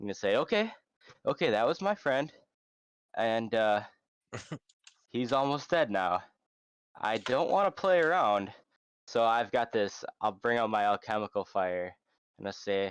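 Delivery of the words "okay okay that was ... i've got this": loud, raised, menacing, threatening voice. Speaking in character to threaten enemies, loud intimidating in-character speech. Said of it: "I'm gonna talk, like, loud enough for them to hear me".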